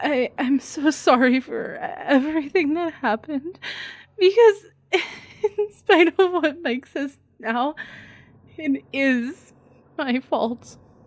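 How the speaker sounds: put-on crying. Showing how to sound like you're crying in a tearful monologue: acted crying. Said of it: "let me perform a small monologue from the Blair Witch Project".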